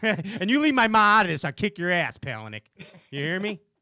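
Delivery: tough guy voice. Jokingly threatening another speaker over a remark about Mom: mock South Side Chicago toughness. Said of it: "that's the South Side in me come out".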